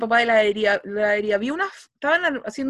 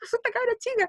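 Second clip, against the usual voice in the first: put-on scared, startled voice, higher and quieter; 11 semitones higher, 6 dB quieter than usual. Retelling how a passerby reacted to her gasp: imitating someone scared. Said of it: "Quedó como asustado".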